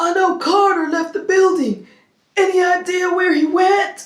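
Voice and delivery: very high voice breaking into laughter. Recapping a scene where Ridge enters the office, doing Ridge's voice while cracking up. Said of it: "I can never do Ridge's voice without cracking up".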